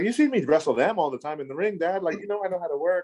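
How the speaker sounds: high, eager, hard-selling sales pitch voice.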